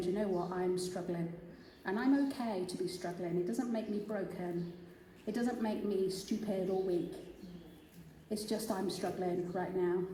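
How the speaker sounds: ordinary talk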